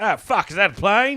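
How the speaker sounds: put-on Australian accent. Recounting a comedy special's bit about nine eleven, in an Australian accent. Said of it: "the Australian on nine eleven".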